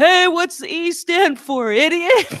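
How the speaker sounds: very high, booming, far-carrying yell. Retelling a friend yelling across a parking lot, retelling a big booming yell. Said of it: "with his big booming voice yells".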